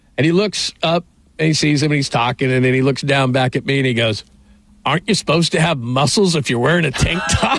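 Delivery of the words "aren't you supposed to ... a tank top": mock matter-of-fact, dry, straight deadpan delivery. Retelling how he looked back down at you and spoke, not trying to be funny, imitating his deadpan. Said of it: "Warren Moon deadpans".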